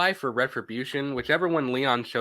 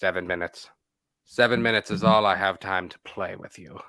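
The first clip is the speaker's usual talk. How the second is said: low, dropped video-game villain voice; 5 semitones lower than usual. Chatting about Resident Evil 5 with another player, doing a Wesker impression. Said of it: "It's like how he talks".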